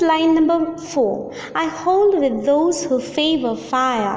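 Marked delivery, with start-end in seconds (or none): none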